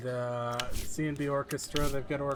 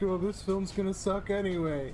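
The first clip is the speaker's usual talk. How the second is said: put-on mopey, downbeat, gloomy, defeatist droop; 4 semitones higher than usual. Imitating a crew member nicknamed Mister Depresso: imitating a depressed crew member. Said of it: "we got Mister Depresso over there".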